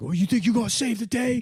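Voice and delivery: play-acted woman yelling in very high voice. Retelling how a woman on a train yelled at you, imitating someone yelling. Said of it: "she's yelling at me".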